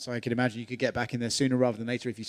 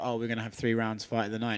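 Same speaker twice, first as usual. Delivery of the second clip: plain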